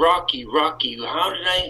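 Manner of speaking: ordinary delivery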